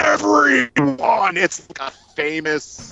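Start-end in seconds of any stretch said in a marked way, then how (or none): 0.0-1.4 mock, very high, raspy, ragged, unhinged deranged shriek. Retelling a famous movie clip where the bad guy turns and screams at his number two, retelling a villain's scream. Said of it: "he turns around and screams".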